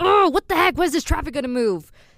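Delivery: angry raspy outburst. Voice actor showing how their angry traffic voice sounds, angry raspy Surge voice. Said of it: "So you can hear a bit of Surge in there".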